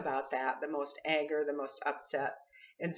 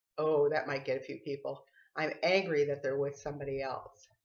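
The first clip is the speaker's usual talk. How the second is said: usual speaking voice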